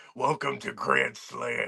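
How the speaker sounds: forced, pushed-down voice, very low and deep. Mocking how he deepened his voice on the mic: mocking a deepened voice. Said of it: "he deepened his voice too".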